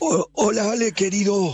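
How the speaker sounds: high, hoarse little voice.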